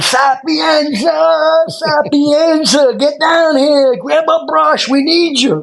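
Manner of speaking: very high, very slow holler, "sapienza" stretched. Retelling calling an instructor down to help: retelling a yell. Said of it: "I'm yelling".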